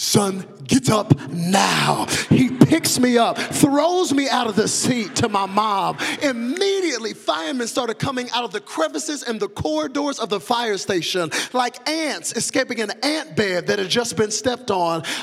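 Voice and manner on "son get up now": put-on Nigerian accent, slow, "now" drawn out. Retelling what his father said to him at a fire station, in a Nigerian accent. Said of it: "in his Nigerian voice".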